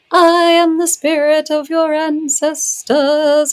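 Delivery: very high, slow, drawn-out, eerie puppet-woman voice. Retelling how a ceremony leader addressed someone: imitating a maniacal puppet-like spirit. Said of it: "maniacal look on her face, being like".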